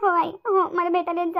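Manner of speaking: tearful. A daughter asks her mother to come visit her, crying. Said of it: "हो बाई आनंदी रडू नको मा तू".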